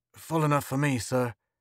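plain

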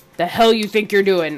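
loud, spit-flecked yell, close up. Voicing an officer confronting a soldier up close: spitting yell. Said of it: "Kinda talk spitting, yelling into his face".

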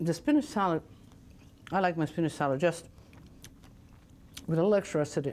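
speaking while chewing, mouth full of food. Speaker eating a spinach salad, talking with mouth full. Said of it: "not supposed to talk with your mouth full".

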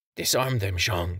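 whispering. Reading a story, a woman speaks during a standoff: whispering. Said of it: "she whispered".

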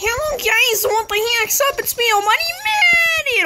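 voice breaking into a very high crack. Opening a let's play intro to viewers, voice cracking. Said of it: "Oh god, my voice cracked!".

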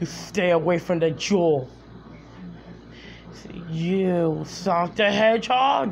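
video-game hero's cartoon character voice. Going through Sonic characters, the speaker does their voices: Knuckles voice. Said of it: "Knuckles the Ectoderm".

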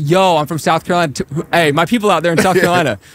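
high, gassed-up, hyped-up bragging. Showing how people from there gas it up: imitating hyped-up hometown bragging. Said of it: "you wanna gas it up a lot and be like".

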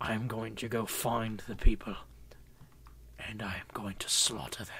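put-on angry British accent, whispered. Speaker repeats a line in what they call their angry voice: put-on angry British voice. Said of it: "It's my angry voice".

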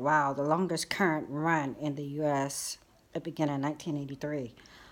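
ordinary talk, nothing marked

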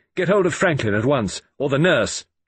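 sharp, high-pitched, commanding tone. Narrator, examining a wound, orders Norton to fetch help, sharply. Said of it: "I said sharply".

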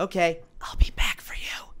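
slow, hushed whisper. Voicing a character who peeks over a ledge to an orb: whispering. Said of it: "he whispers to the orb".

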